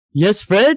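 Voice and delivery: big, loud cartoon caveman voice. Answering a friend's Fred voice in a Barney Rubble voice. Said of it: "That's my Barney".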